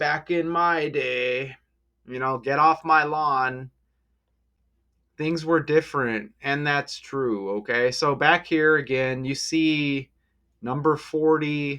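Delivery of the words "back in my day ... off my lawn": put-on cranky, grumpy old man voice. Joking about sounding old, grumbling a line: grumpy old man voice. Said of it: "I sound like an old man".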